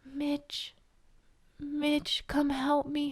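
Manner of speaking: very quiet, hushed, drawn-out call. Retelling a story set in an attic, the speaker quotes her in a very quiet voice. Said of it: "Like the quietest voice ever".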